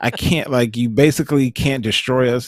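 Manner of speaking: normal talking voice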